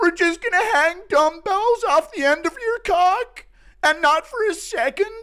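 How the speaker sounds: very high-pitched tantrum rant. Getting into full character as Schmitty, throwing a tantrum. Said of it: "get into full character here as Schmitty. Throwing a tantrum on this".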